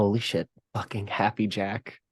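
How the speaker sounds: muttered under the breath. A player voicing their character Topher's reaction, muttered under breath. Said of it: "says under their breath".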